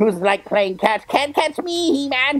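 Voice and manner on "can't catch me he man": taunting tone with raised pitch. Retelling a fight scene as Skeletor taunting He-Man: Skeletor taunting He-Man.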